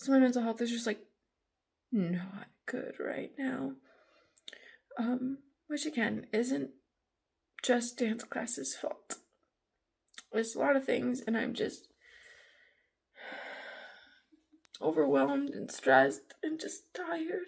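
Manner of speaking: crying while talking. Talking about a hard week after a bad class, crying while talking. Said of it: "apparently I'm still crying".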